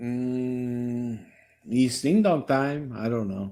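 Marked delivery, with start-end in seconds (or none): 1.7-2.9 put-on Spanish accent. Suggesting what his catchphrase would have been, in a spanish accent. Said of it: "did you say that his catchphrase would have been in a Spanish accent?".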